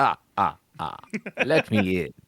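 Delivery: put-on vampire voice, Transylvanian accent. Pretending to be a vampire asking to be let in: Transylvania vampire voice. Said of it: "I would use my Transylvania voice".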